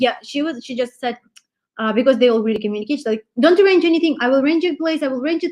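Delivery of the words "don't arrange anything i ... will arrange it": put-on rapid-fire insistence, much higher. Speaker imitates a woman bombarding her with messages, mock rapid-fire insistence. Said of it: "She sounded like an old Soviet machine gun".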